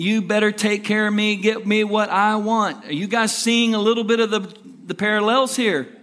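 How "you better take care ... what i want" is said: mock screaming, crying child's yell, slower. Explaining how JJ reacts when he doesn't get his way, imitating JJ crying and yelling. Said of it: "He cries and he yells and he screams".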